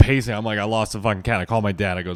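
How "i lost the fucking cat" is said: ordinary talk, nothing marked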